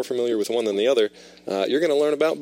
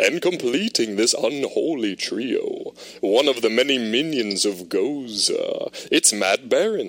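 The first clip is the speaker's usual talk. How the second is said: eerie, put-on spooky host voice. Host introducing the third guest of the show, spooky voice. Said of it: "I gotta put my spooky voice back on".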